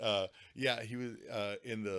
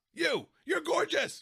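mock yelling, much higher pitch; 9 dB louder than usual. Impersonating a creator addressing the camera, imitating a creator yelling at the camera. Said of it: "yells at the camera".

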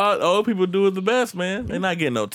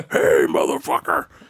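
rough, creaky, raspy smoker's voice. Fondly remembering Bash, whom you love to death, show how he talked, imitating Bash's cigarette voice. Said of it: "he had like the cigarette voice".

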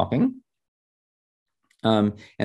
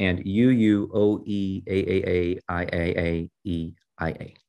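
plain

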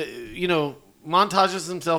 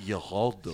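put-on Spanish accent, lower and quieter; 8 semitones lower, 7 dB quieter than usual. Retelling a movie scene where a character says a name: put-on Spanish accent. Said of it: "Says it in the Spanish accent".

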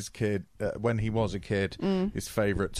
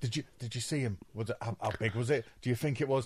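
mock childish excitement, quieter; 2 semitones higher, 5 dB quieter than usual. Imitating a character questioning a witness: imitating childlike eagerness. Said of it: "he's so childlike at this".

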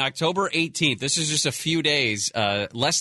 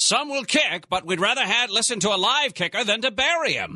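put-on very high, old-timey voice with old-fashioned transatlantic speech; 9 semitones higher than usual. Quoting a mayor from 1918, in an old-timey mayor voice. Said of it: "I imagine he had an old timey voice".

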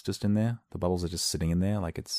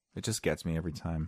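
ordinary talk

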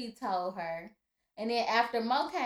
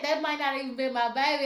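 ordinary talk

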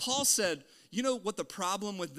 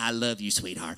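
put-on eighty-year-old woman voice, much lower, louder; 11 semitones lower, 4 dB louder than usual. Playing your own grandmother as she speaks to Matthew, in a Granny John voice. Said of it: "My hypocritical voice is like an 80-year-old smoking lady".

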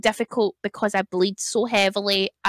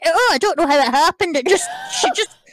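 quick, flustered, pitched-up speech. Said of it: "and then, uh, uh".

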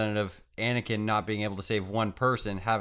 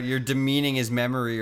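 ordinary delivery

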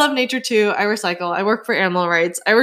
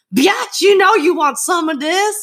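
very high put-on slangy voice; 9 semitones higher than usual.

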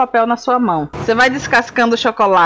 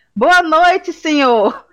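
shouting out in a high voice; 6 semitones higher than usual. Speaker retells shouting to the man taking a pizza order on speakerphone. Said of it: "eu gritei".

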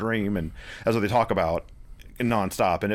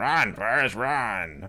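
full-on gremlin creature voice. Describing a movie gag, one of the gremlins going in, gremlin voice. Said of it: "going in very gremlin voice going".

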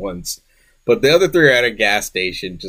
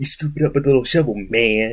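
wicked, menacing, sinister put-on evil villain voice. Retelling what a character said in his evil Quentin Tarantino voice. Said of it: "his evil Quentin Tarantino voice going".

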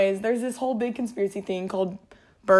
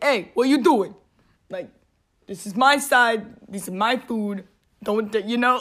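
put-on New Yorker's accent; 2 semitones higher than usual. Imagining how an animal would talk: New York accent. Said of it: "A New York accent".

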